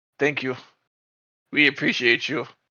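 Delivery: very quiet, soft, hushed voice under the breath. Thanking Sean Fear in character: very quiet. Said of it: "say very quietly".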